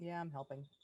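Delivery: reluctant, flat, half-hearted, unenthusiastic. Agreeing to help when asked by another player: unenthusiastic. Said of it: "Don't sound too enthusiastic about it".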